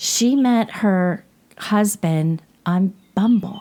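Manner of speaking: slow, heavy, weighty, meaningful and resonant delivery. Telling others how a woman met her husband: said with heavy resonance. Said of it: "you said that with such a resonance".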